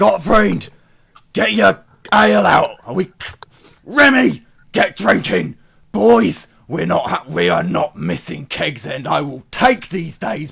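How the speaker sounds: shouting. Voicing a character heard during a role-play scene, shouting.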